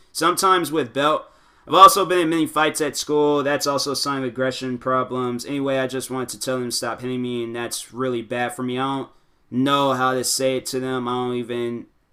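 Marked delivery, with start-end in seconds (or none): none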